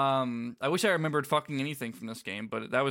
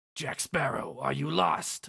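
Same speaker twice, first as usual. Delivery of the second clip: rough, creaky, raspy villain voice; 3 semitones higher than usual. A storyteller voicing Davy Jones meeting a passing character, Davy Jones bad-man voice. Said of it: "I'm trying to like do bad man voice".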